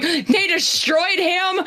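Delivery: put-on, choked-up, tearful crying voice. Retelling a phone call to her sister about a TV episode, imitating own crying. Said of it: "called my sister crying".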